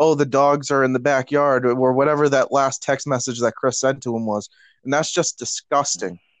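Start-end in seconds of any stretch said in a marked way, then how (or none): none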